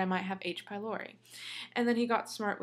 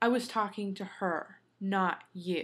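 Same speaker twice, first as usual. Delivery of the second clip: put-on stern, firm tone, spoken slowly. Retelling what he said to the speaker's mom: imitating a stern retort. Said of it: "he gets real stern with her and goes".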